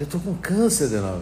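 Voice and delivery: quiet, hushed, low murmur. Retelling what a spiritist center president told him after everyone left, speaking softly. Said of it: "E falou baixinho assim".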